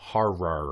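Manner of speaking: slow, drawn-out word. Speaker repeats a word to someone who misheard it, talking slowly. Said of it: "I shouldn't have to talk slowly".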